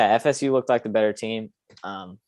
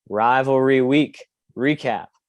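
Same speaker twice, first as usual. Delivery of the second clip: slightly slow delivery. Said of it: "I had to say that a little slowly".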